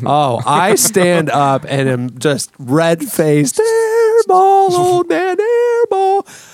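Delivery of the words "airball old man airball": very high, shrill scream. Retelling heckling a player at a game, reenacting the screamed taunt. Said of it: "screaming my lungs out".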